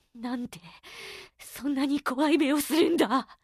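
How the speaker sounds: trembling, quavering voice shaking with fear. Narrating a story, the big man speaks to Musta in a trembling voice. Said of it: "大男が震える声で言いました".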